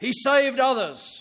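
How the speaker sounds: mock, derisive, sneering, jeering tone. Telling of the one nailed up, the speaker quotes his mockers, imitating a mocking voice. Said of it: "Can you hear the mocking in their voice?".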